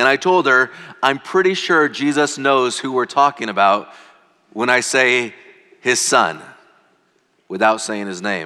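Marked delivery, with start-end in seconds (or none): none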